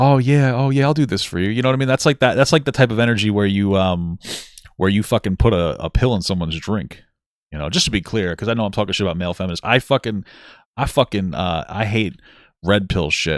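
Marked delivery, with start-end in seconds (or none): 0.0-1.5 sarcastic, mocking, pitched-up, eager-to-please voice. Mocking male feminists who try to be the nice guy: mocking a self-styled nice guy. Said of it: "They try to be the nice guy".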